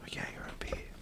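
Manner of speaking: soft, unvoiced whisper. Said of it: "Let's just whisper about him".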